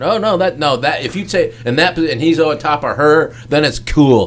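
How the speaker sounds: ordinary delivery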